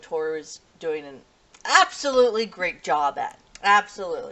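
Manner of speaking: ironic, tongue-in-cheek, sarcastic, mocking voice. Recapping an episode where Toru rehearses a play, sarcastic. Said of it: "I'm being sarcastic here".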